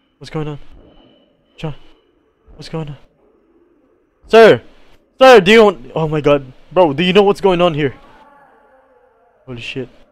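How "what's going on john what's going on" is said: fast, scared, frightened, hushed whisper. Playing a scary game and not understanding what's happening, scared. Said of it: "I'm so scared right now".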